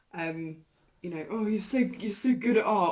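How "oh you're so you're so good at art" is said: envious, irritated, annoyed voice, pitched up. Imitating how the other speaker praises their art: imitating an annoyed tone.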